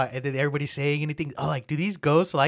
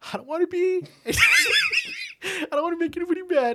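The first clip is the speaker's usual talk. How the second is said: play-acted very high, drawn-out, swooping tearful plea. Retelling what a man on a show said: imitating someone crying. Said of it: "He's, like, crying".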